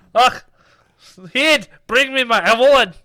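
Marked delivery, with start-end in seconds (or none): 1.3-2.8 mock Gaelic accent, much higher, louder. Saying avalon after being told to say it with a gaelic accent; gaelic accent. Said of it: "You gotta say it with like a Gaelic".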